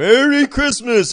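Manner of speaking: very high-pitched, loud Christmas elf voice. Retelling a reflexive reply to someone's greeting: elf voice. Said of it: "as an elf".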